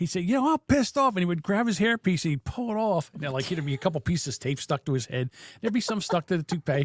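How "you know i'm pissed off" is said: put-on drunk voice, higher pitch. Retelling how a drunk father would start ranting: imitating drunk dad. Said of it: "My dad would get drunk sometimes".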